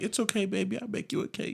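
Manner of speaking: very high, hushed, soft, sweet, gentle motherly tone. Contrasting an aggressive mom with a typical mom, imitating a soft-spoken mom. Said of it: "she could have said it a little softer".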